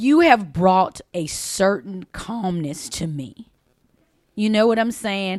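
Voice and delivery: choked up, tearful, on the verge of crying. Telling a spouse what changed in the marriage, tearful, on the verge of crying. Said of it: "I'm about to start crying".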